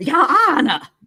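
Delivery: put-on very high, loud, belted-out Carolina accent. Put on a voice to address the judge, Dick Harpootlian voice, Carolina accent. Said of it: "Like this Carolina accent is spot on".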